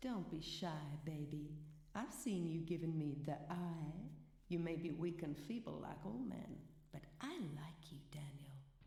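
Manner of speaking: put-on woman's voice with a distinct American accent.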